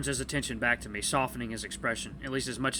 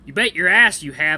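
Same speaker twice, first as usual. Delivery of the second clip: very loud, high put-on southern accent; 4 semitones higher, 14 dB louder than usual. Reading aloud, the speaker tries a character line in high-pitched southern accent. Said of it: "Let's see if I can do a really high-pitched southern thing".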